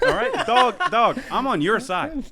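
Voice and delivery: loud, high-pitched, slow.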